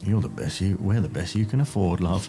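very low mumble under the breath. Replying to a complaint about the crew, a character speaks, mumbled under breath.

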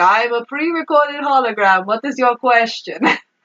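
ridiculous, hammed-up, exaggerated put-on Italian accent. Retelling a scene where a pre-recorded hologram asks for a question, in a ridiculous Italian accent. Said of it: "In like a ridiculous Italian accent".

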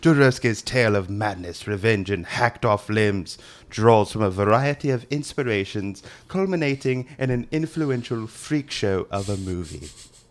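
put-on British male voice. Reading a film entry from a British magazine, in a British guy voice. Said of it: "with his British guy voice".

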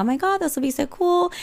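play-acted, very high, a little excited. Recounting tears of joy, retelling being a little excited. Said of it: "I was a little excited because I was like".

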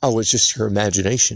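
ordinary talk

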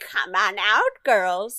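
slow, drawn-out fairy-tale witch voice, calling out. Describing a show scene, voicing the witch calling the girls out: witch voice. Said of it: "you hear a witch's voice say".

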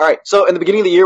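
talking really fast, rattled off.

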